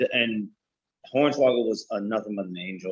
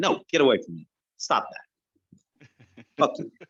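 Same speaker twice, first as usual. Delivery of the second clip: mock-upset child voice, much slower; 3 semitones higher than usual. Retelling how he answered his dad as a boy, acting out upset younger self. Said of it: "And I was like".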